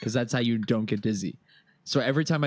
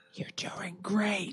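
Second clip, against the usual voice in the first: high, soft, encouraging whispered cheer; 8 semitones higher, 7 dB quieter than usual. In a role-play, a character at the bottom of a climb is whispering encouragement. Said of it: "I'm not shouting. I'm whispering".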